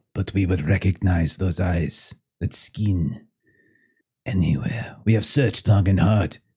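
put-on heavily accented English, thick foreign accent laid on. Voicing a family member claiming a lost child: heavily accented english. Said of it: "It's very thick accent".

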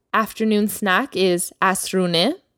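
plain

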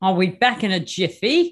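put-on Australian accent. Repeating a phrase when asked to try it: australian accent. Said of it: "see if you can say this in your best Aussie accent".

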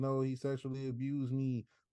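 plain

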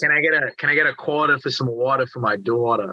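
put-on Boston, Massachusetts accent. Demonstrating regional accents, starting with Massachusetts: Boston accent. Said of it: "that's where you get that Massachusetts".

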